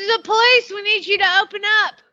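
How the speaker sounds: mock Southern police drawl. Playing out a visit to a house, the speaker acts as police, Southern police accent. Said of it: "Why do your police always have Southern accents".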